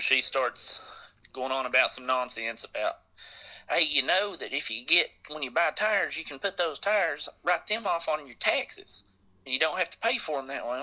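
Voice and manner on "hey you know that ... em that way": put-on Eastern Kentucky accent. Retelling a woman's words in the office: imitating her Eastern Kentucky accent. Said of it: "this accent she was using".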